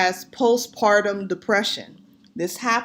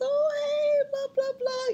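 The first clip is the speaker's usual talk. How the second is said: put-on very high, soft, sweet, tender baby voice; 6 dB quieter than usual. Speaker shows how people answer a cooing baby, in high-pitched sweet baby talk. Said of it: "they do the baby voice".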